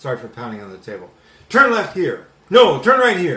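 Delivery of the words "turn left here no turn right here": booming, domineering, very loud, aggressive barking. Speaker acts out a man's repeated turn directions, imitating an aggressive tone. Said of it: "if you hear the tone of voice, the aggression".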